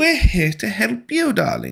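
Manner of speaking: dainty, creaky, sing-song, swooping high noblewoman voice. Voicing Marilla greeting the newcomers, in a dainty, entitled noblewoman voice. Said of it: "like she's this dainty little ... noble, entitled woman".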